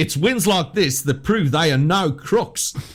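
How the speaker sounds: fake, put-on Australian accent. Reading out quiz clues to the others: put-on australian accent. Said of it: "the superb accent's getting in the way".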